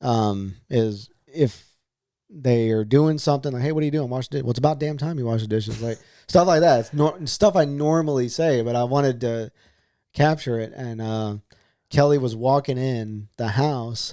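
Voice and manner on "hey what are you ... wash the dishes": usual speaking voice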